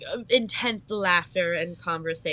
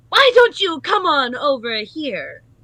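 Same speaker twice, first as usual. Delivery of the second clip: sharp, very loud bark on each word; 8 semitones higher, 10 dB louder than usual. Describing a game character calling out to Zagreus, very sharp voice. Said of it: "in a very sharp uh sharp voice".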